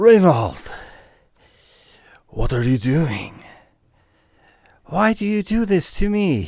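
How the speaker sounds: monster creature voice calling out. A storyteller voices a creature calling out to reynold, in a creature voice. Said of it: "the creature calls out to you".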